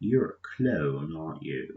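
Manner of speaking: terrible put-on British accent, low pitch. Describing Imperial officers talking to a clone, terrible British accent. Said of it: "sorry for my terrible british accent".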